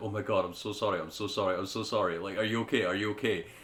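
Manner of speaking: put-on remorseful, very sorry tone. Retelling a partner's apology after a painful bite: imitating someone really sorry. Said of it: "she was really sorry".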